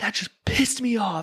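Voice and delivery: put-on yell, slowed down. Retelling what a man said after throwing a knife, imitating someone yelling. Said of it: "now he's yelling at me with".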